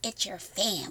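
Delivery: voice like a gremlin. Quoting what people have been drilled to hear: gremlin-like voice. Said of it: "I think I just sounded like your gremlin".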